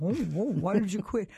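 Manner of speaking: put-on mumbling through food. Retelling a question put to a woman while eating; acting out a full mouth. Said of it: "oh, my mouth is full".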